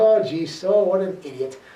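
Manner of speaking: usual speaking voice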